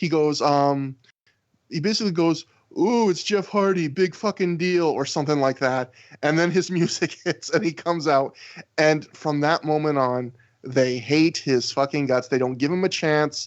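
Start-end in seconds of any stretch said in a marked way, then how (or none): 2.8-4.9 acted, snide, sarcastic jeering tone. Retelling a fan's heckle before a wrestler comes out, imitating a sarcastic asshole voice. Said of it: "most like stereotypical sarcastic asshole voice".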